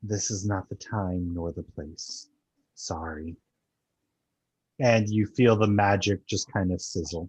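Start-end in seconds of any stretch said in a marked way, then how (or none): 0.0-3.4 gentle, warm, very soft soothing murmur. The game master speaks as Mishakal to a player, in a very soft voice. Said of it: "she says to you in a very soft voice".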